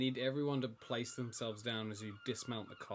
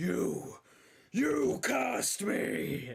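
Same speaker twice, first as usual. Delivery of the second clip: very high, raw, rough shriek; 13 semitones higher, 7 dB louder than usual. Game master voicing Gimbek as he turns to the players, Gimbek screaming. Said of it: "Gimbek just starts screaming at the sky".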